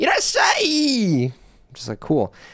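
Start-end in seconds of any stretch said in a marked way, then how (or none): 0.0-1.3 squeaky, very high-pitched voice. Retelling a story, imitating a man saying irasshai: very high-pitched irasshai. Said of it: "he had a really high pitched voice. So he's like".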